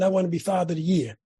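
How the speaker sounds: normal talking voice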